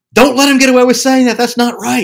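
shrill, very loud, high-pitched yell. Recounting listening to a phone call recording; retelling yelling at the computer. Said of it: "I'm literally yelling at the computer".

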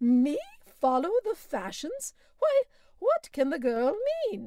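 indignant, astonished outburst, high and loud. Narrator voices the aunt breaking in on Mary's question: Aunt Abigail, astonished, breaking in. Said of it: "who were of the old school and rather ultra-puritanical in their habits and notions. / was [name]'s half-smiling, / [name]?"".

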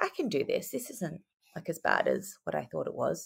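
soft, hushed, quiet reassuring tone. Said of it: "And I was like".

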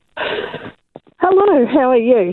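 breathless, winded, puffing, short of breath. Caller to a radio show, digging a trench, answers out of breath. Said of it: "I'm out of breath".

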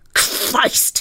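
hissing voice. Dyson touches something hot in the engine and springs back, hissed. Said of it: "he hissed".

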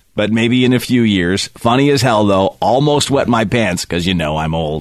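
usual speaking voice

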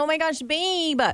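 put-on high-pitched Valley Girl way of talking. Saying they can't do the voice, then slipping into a Valley Girl voice. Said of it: "it's Valley Girl".

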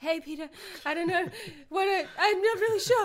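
high, hesitant noncommittal tone. Imitating the other speaker as having no opinion: imitating the other speaker. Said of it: "Yours was not having an opinion".

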